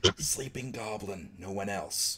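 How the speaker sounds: barely audible, very quiet hushed whisper. A player's character turns back to the others, in a whisper. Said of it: "whisper to them".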